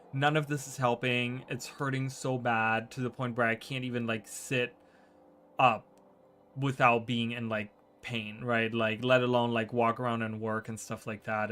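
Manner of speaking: normal talking voice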